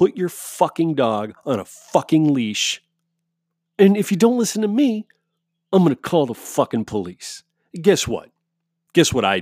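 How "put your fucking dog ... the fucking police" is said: acted heated, aggressive, pitched-up tirade. Retelling what she shouted at a woman about leashing her dog: retelling a loud yell. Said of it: "Very loudly".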